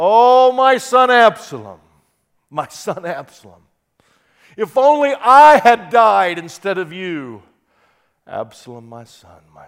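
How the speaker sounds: acted, very loud wailing lament with swooping pitch. Quoting a famous Old Testament lament for a son, as a crying lament. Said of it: "Can you hear him crying?".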